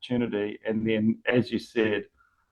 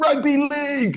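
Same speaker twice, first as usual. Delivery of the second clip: mock excited commentator yell, pitched way up; 3 dB louder than usual. Replaying how the rugby league commentator ended his call: imitating a commentator yelling. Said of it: "And then he just yells out".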